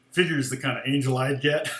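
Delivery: plain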